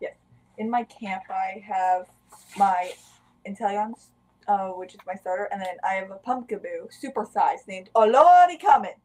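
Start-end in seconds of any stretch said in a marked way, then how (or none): 7.9-8.8 high, very loud, almost screaming. Naming a Pumpkaboo the way it must be said: almost screaming Olori Kamen. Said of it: "you have to say it like that, by the way. Like it, like you're almost screaming it".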